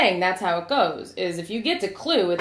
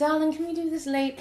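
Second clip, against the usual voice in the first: put-on British accent, higher pitched and quieter; 7 semitones higher, 5 dB quieter than usual. Retelling the ending scene as Maggie Smith: Maggie Smith impression. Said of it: "And Maggie Smith is like".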